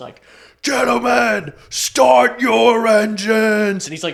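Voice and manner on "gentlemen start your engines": put-on very loud, drawn-out, slow drunk bellow. Retelling a clip of a NASCAR event intro: imitating drunk Kevin James. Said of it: "super drunk".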